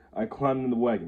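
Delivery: ordinary delivery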